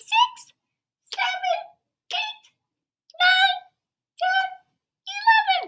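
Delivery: very high, slow, squeaky little voice. Leading children to count aloud together, squeaky baby bear voice. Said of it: "In your squeaky voice".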